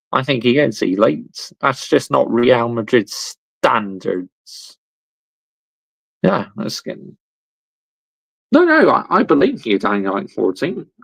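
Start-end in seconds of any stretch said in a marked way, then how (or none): none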